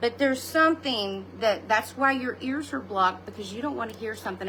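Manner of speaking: plain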